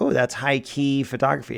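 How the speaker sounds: ordinary talk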